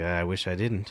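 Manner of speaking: put-on quiet old man mutter under breath. Imitating Biden during the debate: muttering under his breath. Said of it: "under his breath, he's like".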